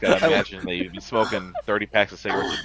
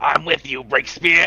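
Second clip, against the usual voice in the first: chain-smoker character voice, higher and louder; 7 semitones higher, 5 dB louder than usual. Attempting the character's line for breakspear when asked: chain-smoker character voice. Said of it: "what's your attempt?".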